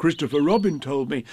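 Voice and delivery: ordinary delivery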